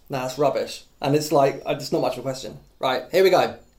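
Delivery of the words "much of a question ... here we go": ordinary talk, nothing marked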